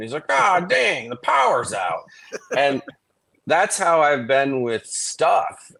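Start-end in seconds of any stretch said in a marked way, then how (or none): 0.3-2.0 high, swooping, rasping, rough-edged stand-up comic voice. Retelling a comedian's bit about the power going out: Dave Mordahl impression. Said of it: "this is me doing an impression of his bit".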